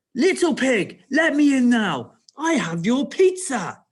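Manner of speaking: loud, aggressive snap, slow and drawn out. Speaker reads a story character's line at a door, snapping aggressively. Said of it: "he knocked on the door and snapped".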